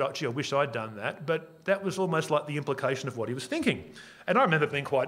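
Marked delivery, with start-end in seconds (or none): none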